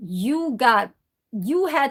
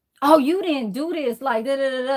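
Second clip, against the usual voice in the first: put-on sassy, snippy, attitude-laden voice; 4 semitones higher than usual. Imitating people who get shut down for being wrong, imitating someone with attitude. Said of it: "like with an attitude".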